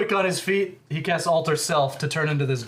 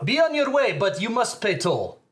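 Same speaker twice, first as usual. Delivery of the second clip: put-on Russian accent on every word, raised pitch; 5 semitones higher than usual. Voicing Mister Shepard demanding a toll from the guards: Mister Shepard Russian accent. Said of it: "This is pretty Russian".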